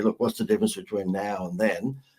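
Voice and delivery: ordinary talk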